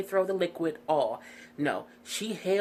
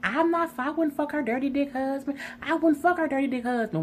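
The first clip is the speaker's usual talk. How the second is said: put-on hyped yell, much higher pitch; 8 semitones higher than usual. Retelling an argument, imitating Stacey hyped yelling. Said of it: "Why you all hyped and in people's face yelling?".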